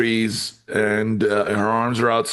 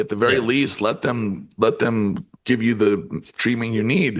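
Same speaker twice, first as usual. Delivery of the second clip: ordinary talk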